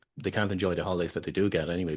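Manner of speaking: ordinary talk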